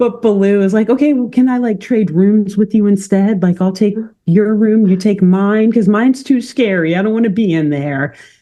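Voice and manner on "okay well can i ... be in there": put-on shaky, trembling voice, higher. Speaker retells what Baloo said to Becky, imitating Baloo's shaking voice. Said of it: "His voice is shaking".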